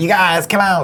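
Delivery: high-pitched cartoon voice. Recalling how everyone copied a cartoon when it came out: Cartman voice. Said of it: "doing Car-, Cartman".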